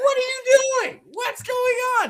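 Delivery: put-on very high, loud, shrill, enraged little girl voice. Retelling how three-year-old Mila mimics his wife's road rage in the car, imitating Mila's mock road rage. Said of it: "Mila mimics her questioning lights, questioning cars".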